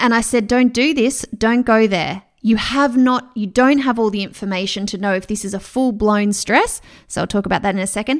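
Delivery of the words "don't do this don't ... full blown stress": imitated harsh tone. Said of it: "I kind of did it in a harsh way".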